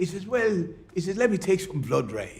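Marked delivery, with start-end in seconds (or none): 1.2-2.4 put-on, strong, thick Irish brogue. Speaker quotes what a man told him, in a strong irish accent. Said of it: "strong Irish accent".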